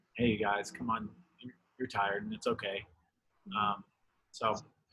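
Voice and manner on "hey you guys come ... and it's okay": quiet, soft, quick, kindly, gentle coaxing voice. Acting out words telling tired people it's okay, in a quiet voice. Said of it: "quiet voice".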